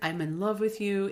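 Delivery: plain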